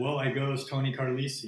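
ordinary talk, nothing marked

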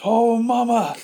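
excited, laughing yell, high and loud.

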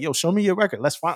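keen, eager, fired-up voice. Recalling eagerly reviewing others' records, imitating own past excitement. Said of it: "excited, like".

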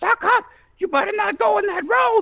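very high, screaming, shrill voice. Retelling a childhood story, imitating Mama Sock screaming from the kitchen window. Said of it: "Mama Sock starts screaming".

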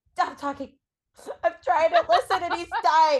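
words choked through sobbing, hyperventilating. Retelling being interrupted while listening to a sad book: imitating her own past sobbing. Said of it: "just literally hyperventilating".

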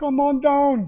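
put-on Hawaiian accent. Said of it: "That's a Hawaiian accent".

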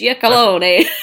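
authentic Italian-accented pronunciation. Showing how her last name sounds: real Italian pronunciation. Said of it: "if you wanna get real Italian".

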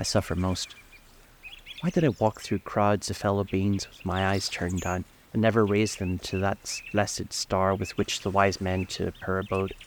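ordinary delivery

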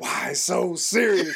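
soft, quiet, hushed whisper. Retelling a remark to a friend in the theater: retelling a whisper. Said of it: "I whispered".

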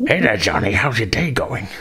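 comic sci-fi alien creature voice. A cast member tries out the voice for a show role; Ferengi voice. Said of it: "I have to talk like this".

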